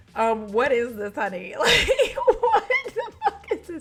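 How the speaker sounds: barely holding back laughter. Reviewing a Morphe cherry Coke palette, holding back a laugh. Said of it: "I'm trying not to laugh immediately".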